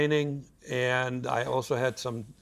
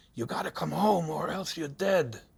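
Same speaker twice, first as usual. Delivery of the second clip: mock whisper with a Russian accent; 4 semitones higher than usual. Recalling a stranger approaching at the subway, in a whispered Russian accent. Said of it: "whispering in my ears with a Russian accent".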